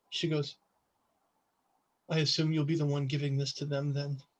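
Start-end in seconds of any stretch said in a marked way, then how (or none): 2.1-4.2 quiet, soft-spoken, hushed half-whisper. Game master voicing Roselia half-whispering to a player, in Roselia's soft half-whisper. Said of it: "she whispers to you in that that soft voice of hers".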